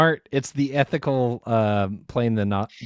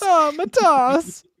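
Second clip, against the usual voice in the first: loud put-on Italian accent, pitched very high; 5 dB louder than usual. Repeating Buzelis's first name back and forth; Italian accent. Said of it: "Cut the Italian accents".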